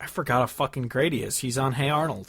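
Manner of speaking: ordinary talk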